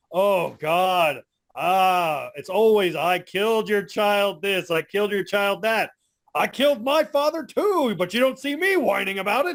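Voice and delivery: classic, primo cartoon villain voice. Retelling a scene where the villain answers a woman attacking him, M. Bison villain voice. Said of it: "primo primo villain voice".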